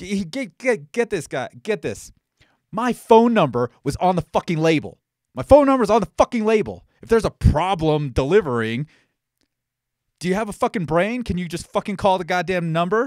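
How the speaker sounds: furious, loud, heated angry tirade. Speaker complains about a failed delivery with his number on the label, heated angry rant. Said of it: "Sorry. I'm getting a little heated".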